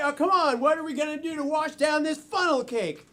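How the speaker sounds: usual speaking voice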